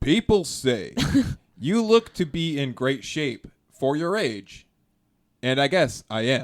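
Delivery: slow, deliberate robotic host voice. Showing the others an Alex Trebek impression. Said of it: "my Alex Trebek thing".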